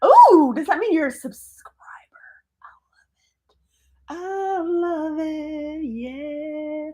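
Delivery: high, breathy, delighted, excited whisper.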